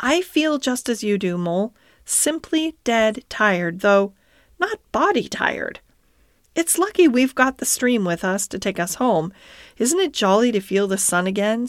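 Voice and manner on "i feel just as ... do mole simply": plain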